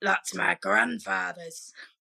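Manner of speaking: put-on, creaky talking-skull voice. Telling a story, the speaker voices a skull that speaks to a man: talking skull's voice. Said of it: "but I'm doing it".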